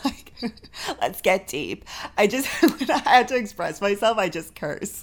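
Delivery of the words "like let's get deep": put-on California valley girl accent. A podcast host, discussing cursing when words fail, slips into a Valley Girl voice. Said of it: "It's my Valley Girl voice".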